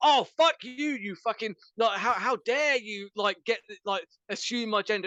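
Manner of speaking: mock defensive outrage. Ranting about people reacting to being called sir or miss, mock defensive outrage. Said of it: "don't immediately get on the fucking defensive going".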